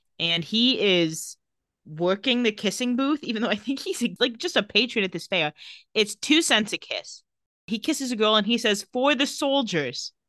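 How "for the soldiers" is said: put-on British accent, a bit higher pitch. Retelling a character's line from a kissing-booth scene, British accent as Julian. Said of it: "You have a British accent".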